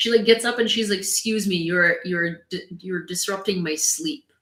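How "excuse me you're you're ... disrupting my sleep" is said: put-on, genuinely irritated, annoyed dog voice. Voicing the dog who is disrupted by the speaker in the chair: voicing an annoyed dog. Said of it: "she's genuinely annoyed".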